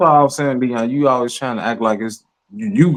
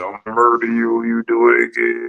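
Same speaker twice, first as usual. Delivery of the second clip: put-on whispered voice. Imitating another speaker's version of a threat: imitating someone whispering. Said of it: "I'm whispering this shit".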